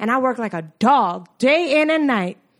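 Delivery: high, loud, dramatic movie-monologue delivery. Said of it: "That's from Hidden Figures".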